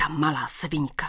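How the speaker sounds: low, angry hiss of a half-whisper. A narrator reads a woman's remark to her companion, as an angry hissing half-whisper. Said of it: "Zasyčela jakási žena".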